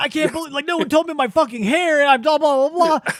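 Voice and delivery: mock high, loud ranting yell. Retelling a movie scene where Nicolas Cage yells: imitating Nicolas Cage yelling. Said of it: "yelling at his family".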